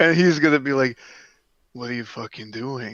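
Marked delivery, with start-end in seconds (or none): 1.7-3.0 very quiet, toneless, flat deadpan monotone. Quoting a man he describes, the speaker repeats him in a flat monotone. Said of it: "do it in a monotone way".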